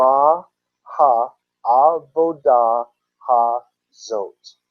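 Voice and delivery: Ma ha'avodah ha'zot said very slowly, drawn out.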